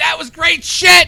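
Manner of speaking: high, loud, excited, hyped-up wrestling-fan yell.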